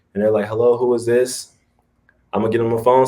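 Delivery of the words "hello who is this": slow, low-energy, fresh-out-of-bed sleepy voice. Explaining mirroring a client's energy on phone calls, imitating a just-woke client. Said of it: "like they just rolled out of bed".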